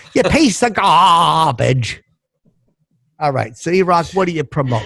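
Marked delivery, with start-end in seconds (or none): 0.2-2.0 slow, drawn-out character voice, each word stretched. Repeating a catchphrase on cue: sounding like Jean Stapleton. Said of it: "I sound like Gene Stapleton".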